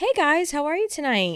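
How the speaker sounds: high, bright customer service voice. Asked to show her customer service voices, greeting customers in a customer service voice. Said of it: "can we hear all of your customer service voices".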